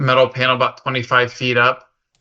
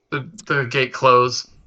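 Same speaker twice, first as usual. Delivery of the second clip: plain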